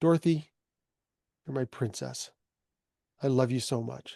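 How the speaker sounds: speaking quietly. Retelling a father's words to a sleeping mother: imitating someone speaking quietly. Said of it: "he said it really quietly".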